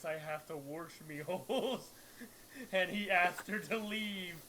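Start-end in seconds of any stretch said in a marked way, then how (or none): 0.0-1.9 put-on brawny, muscular-sounding voice. Speaker retelling a funny woman's story, quoting her in a brawny voice. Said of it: "Said with a brawny voice".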